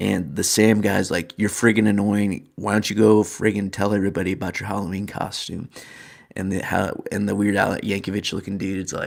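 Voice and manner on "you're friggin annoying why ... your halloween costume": ordinary talk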